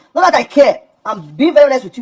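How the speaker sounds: loud, high-pitched, very angry outburst.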